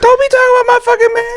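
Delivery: very high-pitched voice. Imitating the other speaker, who was heated and yelling: imitating the other speaker. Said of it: "I don't sound like that".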